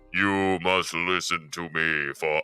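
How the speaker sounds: deep, low, unseen wizard voice. Retelling how a vanished character speaks to the others; Wizard of Oz voice. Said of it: "she does the Wizard of Oz voice".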